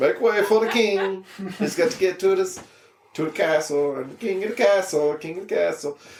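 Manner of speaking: very bad comic voice, very high, wildly swooping. Acting out everybody's reaction as you roll over the Sportster Scrambler, very bad Borat impression. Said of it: "very bad Borat impression".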